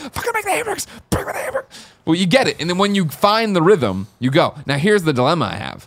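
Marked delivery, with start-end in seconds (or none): 0.0-1.9 urgent shouting squeezed into a whisper-scream. Retelling a past moment while a three-year-old slept nearby, retelling a whisper-scream. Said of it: "we're like whisper screaming".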